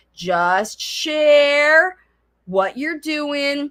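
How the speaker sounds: very slow, drawn-out, clear, careful talk. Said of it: "Maybe I was getting a little fast talking there".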